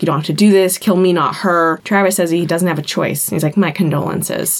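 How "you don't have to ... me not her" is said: mock pleading, acted begging tone. Recounting a scene, acting out a captive man pleading with his captor. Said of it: "And Jack is pleading".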